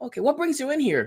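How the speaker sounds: high, eager, pushy store clerk voice.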